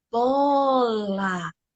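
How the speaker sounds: bola said slowly, calmly and drawn out. Showing how to speak to a child: slow, drawn-out 'bola'. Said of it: "Falar devagar, prolongar as palavras com calma".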